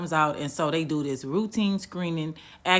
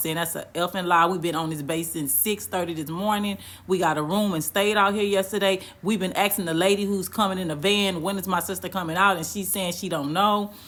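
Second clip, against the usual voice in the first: normal talking voice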